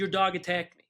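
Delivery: ordinary delivery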